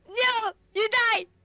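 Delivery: very high, loud, furious little French mouse squeak. Playing a mouse blasting an enemy with a spell: angry French mouse. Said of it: "with the angry look of a French mouse and just be like".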